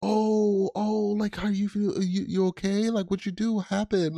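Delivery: very high, slow, drawn-out fake innocent worry. Imitating a sibling who hurt a brother, faking concern to avoid trouble: imitating fake innocent concern. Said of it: "you don't wanna get in trouble, so you're like".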